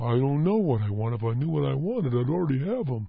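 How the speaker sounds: deflated, unexcited drone, very low and flat. Speaker imitating people who say they don't know what they want, flat unexcited tone. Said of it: "with that tone of voice".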